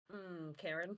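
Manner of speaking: low mutter under the breath. Sipping coffee in the background of a scene: muttered under breath. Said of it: "just under my breath being like".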